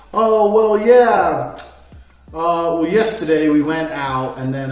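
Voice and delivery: slow, halting, hesitant rambling full of ums and uhs. Retelling how people talk when listened to: imitating hesitant um-filled speech. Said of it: "when I sit there and listen to people".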